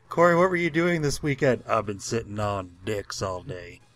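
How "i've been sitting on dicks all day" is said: put-on super-deep voice, lower and slower. Answering a question put to Corey, speaker does a deep-voice Corey impression. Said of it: "Do it in a super, like, deep voice".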